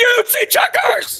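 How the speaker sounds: frantic, shrill, very high scream. In the game, holding the town cat, the player's character asks a little girl, screaming. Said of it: "I start screaming".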